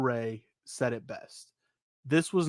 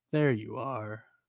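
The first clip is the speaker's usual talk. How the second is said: creepy, eerie, unsettling villain voice; 3 semitones lower than usual. Recounting what comes on screen after Bo says he is nobody, in a creepy Uncle Howdy voice. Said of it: "in the creepy voice of Uncle Howdy".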